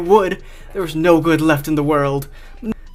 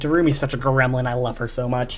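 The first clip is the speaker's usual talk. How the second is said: ordinary delivery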